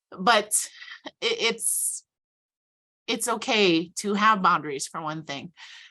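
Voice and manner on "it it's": choked-up voice catching, snagging on a lump. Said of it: "I'm getting emotional talking about it".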